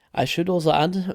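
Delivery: voice cracking mid-phrase. Wrapping up a promo for a gold making guide, adding one more note; voice crack. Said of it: "voice crack, kind of".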